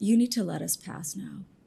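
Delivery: menacing voice dropped right down, deep and low. Playing a character in a tabletop game, trying to intimidate: low intimidating voice. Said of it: "really intimidatingly try to drop my voice as far as a Nahara can".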